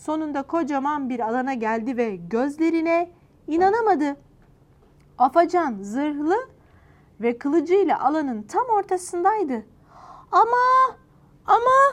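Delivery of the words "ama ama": stammering, much higher pitch and louder. Tuçi finds Afacan in armor with a sword and is stammering. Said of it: "diye kekeledi Tuçi".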